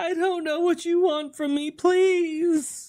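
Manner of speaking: very high-pitched, crying, sobbing, begging voice. Narrator voices a woman yanked back by her hair, begging at the player's feet; sobbing plea. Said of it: "falls backwards down at your feet and begins sobbing".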